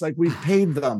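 normal talking voice

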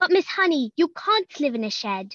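high, put-on British accent, can't said with o. Answering a request for an example from the show: British accent. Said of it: "Can you give us an example?".

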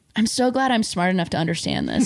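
ordinary talk, nothing marked

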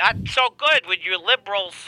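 put-on smug comedian voice.

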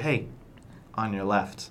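hushed, very quiet, soft, barely-there voice. Retelling a movie scene, quoting the line very quietly: very quiet. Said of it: "very quietly".

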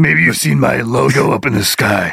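dark superhero character voice, played straight. Joining the bit of Batman on a date: Batman voice. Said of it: "With that voice".

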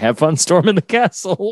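sarcastic, fake-sincere tone. Retelling how they answer a frustrated person at work, retelling a sarcastic reply. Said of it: "I'm wanting to sarcastically wish somebody good luck".

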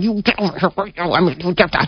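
scolding tone spoken through gritted teeth. Retelling scolding a child in a store: talking through gritted teeth. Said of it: "I was doing the talking through the teeth".

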